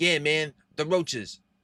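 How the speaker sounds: put-on strong New York accent. Speaker retelling an old conversation, imitating Pedro's New York accent. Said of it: "he has a thick freaking New York accent".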